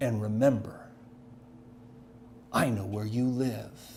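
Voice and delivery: hissed out between words, menacing. Retelling a phone call in which a man threatened him: retelling a hiss. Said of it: "And then he hissed".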